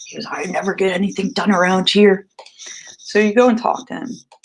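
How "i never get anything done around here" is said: put-on grumbling under the breath. Retelling a coworker's catchphrase: imitating someone grumbling under his breath. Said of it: "grumbling his catchphrase under his breath".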